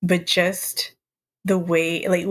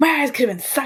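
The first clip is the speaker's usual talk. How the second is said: play-acted high, full-throated shouting, cranked up; 7 semitones higher than usual. Retelling a funny movie clip ending: imitating Buzz yelling.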